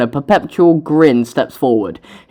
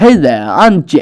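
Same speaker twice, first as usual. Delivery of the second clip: slow, confident, way too manly voice. Trying out a voice for a teenage character from San Diego, too-manly Jack voice. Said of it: "that's way too manly".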